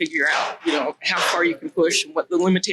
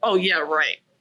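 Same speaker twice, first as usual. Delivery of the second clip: put-on sarcastic tone. Retelling a reply to kids who say she hates them: retelling a sarcastic reply. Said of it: "I'm kinda sarcastic".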